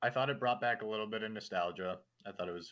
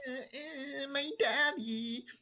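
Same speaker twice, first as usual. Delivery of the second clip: very high, slow, whiny mock baby voice. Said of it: "he was like".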